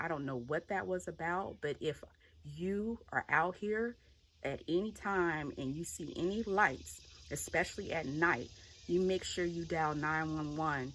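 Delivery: ordinary delivery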